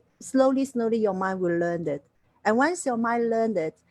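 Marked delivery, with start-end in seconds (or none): none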